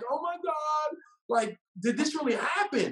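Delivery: mock tearful sobbing, high-pitched and drawn out. Retelling a friend's question during a movie: imitating someone bawling. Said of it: "she's bawling in the movie".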